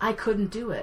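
ordinary talk

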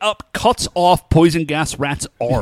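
normal talking voice

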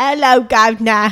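overdone, exaggerated, obnoxiously broad put-on Cockney accent. Mocking how americans do british accents, the speaker demonstrates: obnoxious put-on cockney accent. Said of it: "where we're just doing Cockney".

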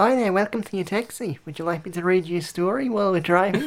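gentle Australian accent. Pretending to be a taxi driver welcoming a passenger: soft Margot Robbie type voice. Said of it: "a more sort of softer Margot Robbie type".

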